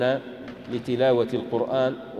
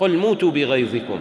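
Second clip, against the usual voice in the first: usual speaking voice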